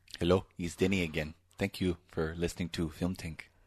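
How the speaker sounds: put-on Spanish-sounding accent. After introducing the podcast, the host voices a man with a Spanish-sounding accent. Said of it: "You made him sound Spanish".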